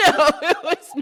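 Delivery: laughing, pitched high.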